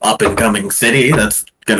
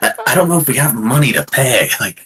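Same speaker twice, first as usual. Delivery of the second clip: in-character whisper, higher; 4 semitones higher than usual. Voicing a character who whispers to the group: whispering to the group. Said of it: "She kinda whispers to the group".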